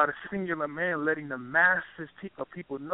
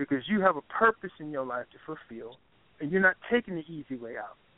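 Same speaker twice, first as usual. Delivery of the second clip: ordinary talk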